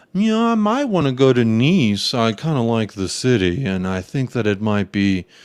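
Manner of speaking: grand, airy, pompous, self-important musing. Retelling a player's words about wanting to move: imitating a player, sounding pompous. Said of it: "trying to be pomp-, uh, sound, like, pompous".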